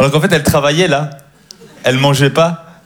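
high, fast stand-up comedian patter. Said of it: "avec ma voix en mode, euh, en mode stand-up".

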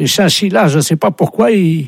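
very high, squeaky put-on voice. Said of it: "il y a quelqu'un qui veut vous parler".

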